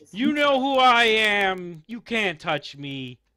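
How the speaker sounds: put-on rude, very drunk voice, slow and high. Game master voicing a very drunk man who stumbles out and pats a player's head. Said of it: "These two, very, very drunk. / They're stumbling out and they look to see you guys, / This one will pat you on the head, / very, very drunk".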